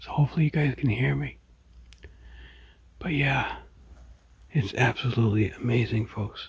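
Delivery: hushed, quiet voice. Filming the sky very early in the morning, speaking quietly. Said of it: "I'm trying to be quiet".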